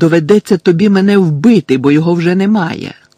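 loud, shouted delivery. Narrator reading Harry answering Bellatrix's demand for the prophecy: shouted. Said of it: "закричав Гаррі".

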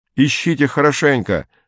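shouting. A man shouts to others while jumping down from a roof, shouted. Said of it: "крикнул он".

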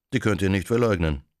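ordinary delivery

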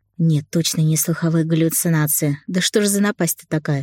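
ordinary delivery

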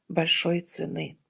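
plain reading voice

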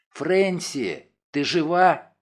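hushed whisper. Wounded narrator in the dark calls out to Francie, whispering. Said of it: "шепотом сказал я".

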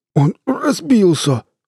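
very high, strained, effortful grunt and groan. A man in an overturned van answers his companion, grunting. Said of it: "прокряхтел Мэтт".

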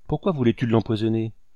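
ordinary delivery

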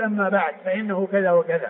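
usual speaking voice

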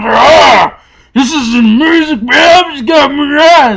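piercing, shrill, high scream with long drawn-out oh. Describing a show's scene to listeners, retelling a scream. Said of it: "And he just screams at him".

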